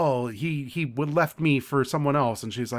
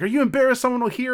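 very high-pitched, rapid-fire, acted-out yelling; 10 semitones higher, 5 dB louder than usual. Retelling a woman yelling at a very drunk man, retelling a yell. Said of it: "she's like yelling at him".

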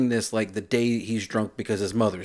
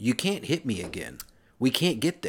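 plain

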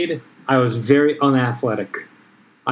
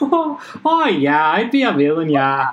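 put-on mock Canadian accent; 4 semitones higher than usual. Speaker teases the other speaker's casual answer about villainy, in a canadian accent. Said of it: "with a Canadian accent".

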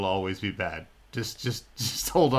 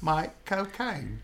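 put-on British accent, higher; 8 semitones higher than usual. Showing the others an easy trick: Michael Caine impression. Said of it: "a Michael Caine impression".

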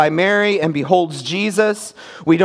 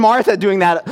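ordinary talk

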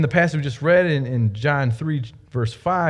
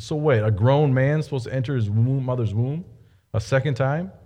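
ordinary talk

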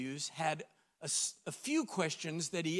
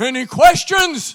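roaring, booming voice, very high and very loud; 10 semitones higher, 22 dB louder than usual. Describing standing before God's throne, the speaker voices God like ten thousand waterfalls. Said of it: "in the voice of 10,000 waterfalls".

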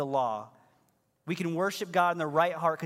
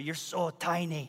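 put-on whispered, very deep strong Scottish accent. Retelling how a man would pick them up and squeeze them, the speaker quotes him whispering in a deepest Scottish accent. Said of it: "in the deepest of scottish accents".

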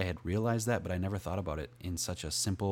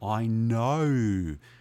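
very loud, broad, exaggerated Australian accent, know stretched; 4 semitones higher, 9 dB louder than usual. Retelling a conversation, repeating a short reply in an exaggerated Australian accent. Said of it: "Tried to sound as Australian as I could there".

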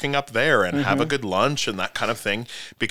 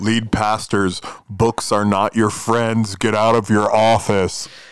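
creepy, eerie tone, louder; 5 dB louder than usual. Addressing lead pastors directly, with a put-on creepy voice. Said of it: "that was creepy".

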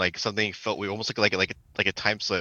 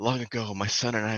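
ghostly woman's voice, spooky, quieter; 4 dB quieter than usual. Retelling what a woman's voice said, like video-game text, ghostly woman's voice. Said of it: "ghostly voice, but it's a woman going".

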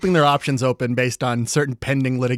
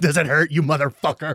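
plain

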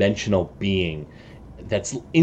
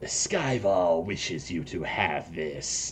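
soft, low, hissing voice; 3 semitones lower, 8 dB quieter than usual. Game master voices Galnar handing the players a box, Galnar's hissing voice. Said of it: "Galnar shuffles up on his hissing voice".

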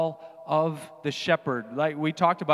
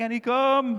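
put-on high calling-out yell; 8 semitones higher than usual. Retelling calling the dog in from the yard: imitating own yelled call. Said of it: "when I'm yelling to her out in the yard".

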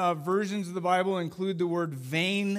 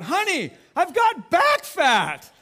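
very high, very slow, drawn-out yelled call; 10 semitones higher, 7 dB louder than usual. Retelling seeing mirrors in a hotel bathroom, calling to their wife: retelling own yell. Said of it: "I yelled out".

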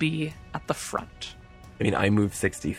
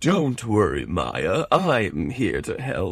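pompous, regal horse voice, slower. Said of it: "Why do I sound like that as a horse?".

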